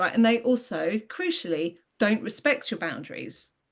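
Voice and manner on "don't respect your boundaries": ordinary talk, nothing marked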